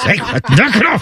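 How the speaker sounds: high whispered yelling. Retelling how everyone hushes each other at home: imitating whisper yelling. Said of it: "all the whisper yelling you want".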